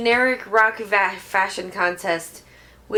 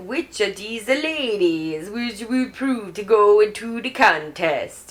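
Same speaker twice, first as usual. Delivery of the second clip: exaggerated Italian accent. Describing the contest designer to a listener, doing the contest guy's Italian-style accent. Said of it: "his accent is legitimately like this".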